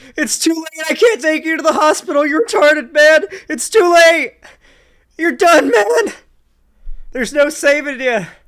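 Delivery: shrill, very high, very loud grieving mourning wail. Mocking another speaker's repeated insults, imitating Tom mourning a dead man. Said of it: "It sounds like Tom is mourning like a".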